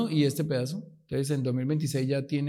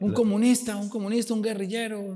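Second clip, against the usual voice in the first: mock shouting, much higher; 7 semitones higher than usual. Recalling people at the airport yelling at him, retelling a shouted insult. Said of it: "me gritaban cosas".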